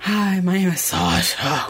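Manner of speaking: put-on, seductive, sultry radio-host voice. Trying out a voice for a planned podcast episode; sultry podcast voice. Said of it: "learn how to speak sultry podcast".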